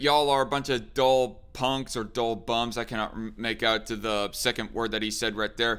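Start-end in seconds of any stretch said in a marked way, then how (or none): none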